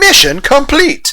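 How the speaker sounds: very high-pitched put-on cartoon voice. A line performed as the Mega Man Legends character: Roll Casket voice. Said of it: "In the voice of Roll Casket from Mega Man Legends".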